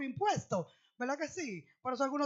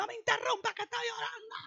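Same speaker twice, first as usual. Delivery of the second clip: yelled outburst, high-pitched shout; 9 semitones higher than usual. Retelling how a woman yelled at her daughter while praying: imitating someone shouting. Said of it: "Allá con un grito".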